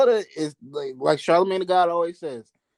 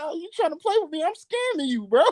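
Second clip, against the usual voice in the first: joking, playful delivery in a higher voice; 11 semitones higher than usual. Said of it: "[name] is hilarious for that".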